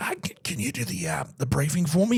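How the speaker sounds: high-pitched voice, half gone and breaking. Retelling how a man asked them to run the briefing, imitating a broken voice. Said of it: "in like a very broken voice that he's got".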